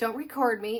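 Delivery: sharp, snippy, curt, irritated voice. Retelling a woman's reply while being recorded: imitating a snippy woman. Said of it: "she gets all snippy with me".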